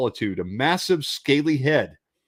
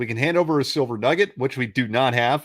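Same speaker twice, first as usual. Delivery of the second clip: ordinary talk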